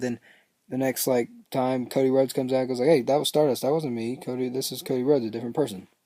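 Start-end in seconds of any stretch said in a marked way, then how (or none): none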